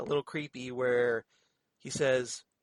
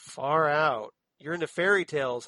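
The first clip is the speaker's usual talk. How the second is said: slow, flat, jaded deadpan monotone, put-on; 2 semitones higher, 3 dB louder than usual. Retelling a woman's jaded answer to a man, the speaker mimics her monotone reply. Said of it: "she's all monotone about it".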